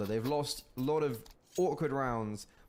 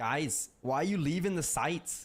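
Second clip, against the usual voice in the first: poor, awful put-on Northern English accent; 4 semitones higher than usual. Imagining a player asking teammates why they left: awful Northern accent. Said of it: "That was an awful Northern accent".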